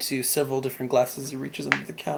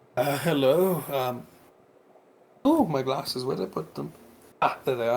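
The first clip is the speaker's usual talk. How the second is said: put-on hesitant, fumbling, halting old dwarf voice. Narrating a shop scene as an old dwarf steps out, old dwarf voice. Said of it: "an old dwarf steps out".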